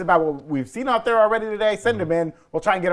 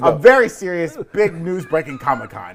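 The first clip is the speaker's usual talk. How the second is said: ordinary talk, nothing marked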